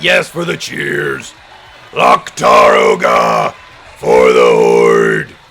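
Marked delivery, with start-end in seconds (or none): 1.9-5.3 very low, very slow, deep, loud orc voice. Answering someone's cheers, in a not-quite orc voice. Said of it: "it's not really an orc voice".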